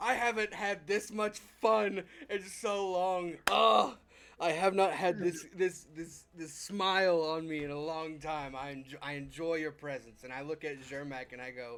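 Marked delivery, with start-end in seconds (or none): 0.0-10.2 hearty, booming words bursting through boisterous laughter. Voicing a character who slams a fist on the table, laughing boisterously. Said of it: "I slam my fist on the table and laugh".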